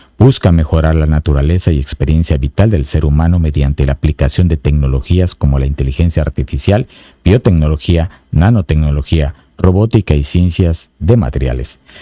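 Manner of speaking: deep, very low radio-announcer read. Reading a paragraph from a book to the audience, in an announcer voice. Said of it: "Así con voz de locutor".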